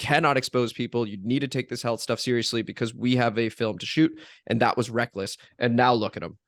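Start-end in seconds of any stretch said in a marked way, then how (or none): none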